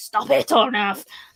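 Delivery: put-on scolding tone. Speaker imitates how parents tell a running child off: imitating a scolding parent. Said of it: "You know how parents do".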